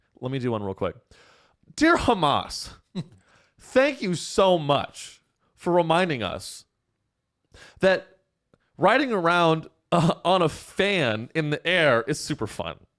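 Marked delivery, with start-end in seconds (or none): 1.8-12.7 slow, pitched-up sarcastic delivery. Reading out a quick sample thank-you note: sarcastic thank-you note.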